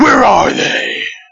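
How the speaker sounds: rough, creaky, gravelly voice. Asking whether he does the Batman voice thing, in Nolan-style Batman voice. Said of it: "the Chris Nolan voice thing where he's like".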